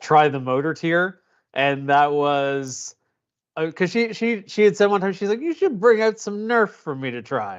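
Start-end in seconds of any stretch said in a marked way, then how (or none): 5.4-7.6 put-on high, swooping elderly lady voice. Retelling what an elderly godmother once asked for, in an old lady voice. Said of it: "that old lady sound I just made".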